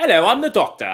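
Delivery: bad British accent, very high and loud, squeaky. Describing a favourite costume, horrible British accent as the Doctor. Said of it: "and a horrible British accent".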